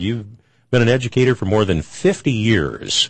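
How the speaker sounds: ordinary delivery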